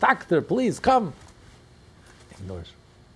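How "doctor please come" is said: put-on refined French accent, much higher, louder. Telling a joke where a woman in labor calls the doctor: higher voice, eloquent french accent. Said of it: "in a higher voice, in a beautiful, eloquent French".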